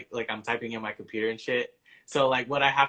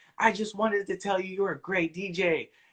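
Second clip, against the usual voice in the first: put-on, high-pitched shouted line; 8 semitones higher than usual. A DJ retells what a woman who spilled her drink yelled; retelling her yell. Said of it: "she like just yells like".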